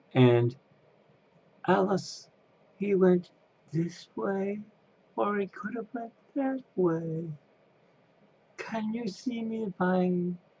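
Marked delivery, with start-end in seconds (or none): 1.7-10.4 pitched way up, kept soft. Recalling a performer's roles, speaker quotes his line to Alice in a Cheshire Cat impression. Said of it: "he also was Cheshire Cat".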